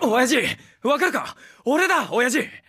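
loud shouting. Calling out to his father, shouting. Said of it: "でかい声出すんじゃねえ".

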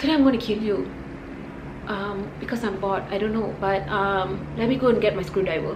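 put-on eerily calm, soft, menacing killer voice. Acting out how a serial killer talks, imitating a scary calm tone. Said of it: "like this kind of scary, calm tone".

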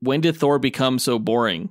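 usual speaking voice

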